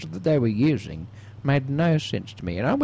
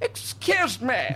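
high, la-di-da, theatrical posh voice; 9 semitones higher than usual. Retelling a night at the theatre, showing how they spoke: put-on posh voice. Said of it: "I had to put on a bit of a posh voice".

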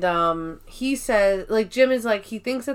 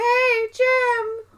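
very high call, name stretched out. Retelling a scene where Pam calls after Jim: worst Pam impression. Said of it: "the worst impression of Pam".

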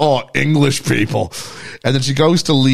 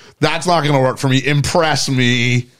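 usual speaking voice

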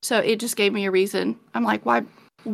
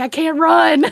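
raised, high yell hollered at full stretch; 6 semitones higher, 5 dB louder than usual. Retelling facing a goose about to charge, retelling a yell. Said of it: "And I'm yelling at him".

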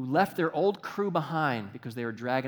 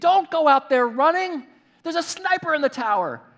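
yelling loudly at a high pitch. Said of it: "we're yelling at the T V".

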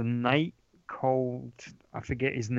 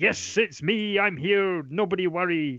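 cheesy voice, high-pitched and slowly drawn out; 6 semitones higher than usual. Mocking how a character is voiced, in a cheesy Arthur voice. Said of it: "it's this really cheesy voice".

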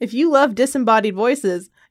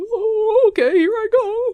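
very high, slow, stretched-out droning voice; 10 semitones higher than usual. Teasing the other speaker about their headphones: imitating their editing voice. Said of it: "that's what you sound like when you edit".

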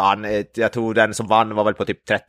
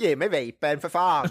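failed, bad put-on Norrköping dialect; 6 semitones higher, 4 dB quieter than usual. Asked how his dialect sounds when he wants a vape, bad imitated Norrköping dialect. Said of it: "hur låter dialekten när han ska ha den?".

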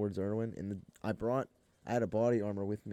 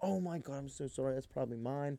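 put-on distraught, super upset, apologetic, pitched-up voice; 5 semitones higher, 5 dB quieter than usual. Retelling a waitress apologizing to the mother: imitating someone upset and distraught. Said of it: "Super upset, like, distraught".

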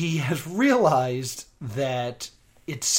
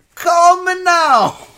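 shrill, very high, very loud belted voice; 14 semitones higher, 9 dB louder than usual. Recalling a TV psychic's catchphrase: Miss Cleo voice. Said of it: "a voice that was better than mine".

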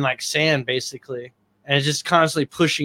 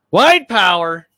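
put-on sudden outburst, loud raised yell; 4 semitones higher, 6 dB louder than usual. Quoting a man in a shared video, the speaker breaks in: retelling a yell. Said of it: "What are you yelling about?".

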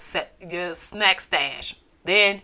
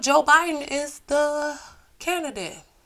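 sarcastic, put-on enthusiasm, pitched higher, fake excited; 8 semitones higher than usual. Talking about the election candidate, with sarcastic fake excitement. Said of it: "You hear the excitement in my voice".

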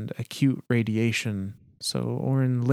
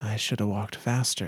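muttering, quieter; 4 dB quieter than usual. Narrator reads a nauseous woman talking with a companion, muttering. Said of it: "she mutters".

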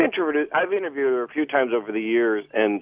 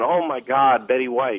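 usual speaking voice

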